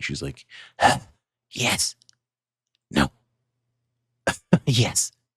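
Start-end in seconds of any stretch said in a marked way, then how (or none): 1.5-5.1 hushed whisper, higher pitch. Describing a character on all fours at a hatch in her floor: whispering. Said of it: "she's whispering".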